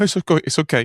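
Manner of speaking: put-on tearful crying, breaking down mid-word, high. Retelling own words while breaking down after the seller cried: retelling own crying words. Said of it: "then I immediately broke down. I went".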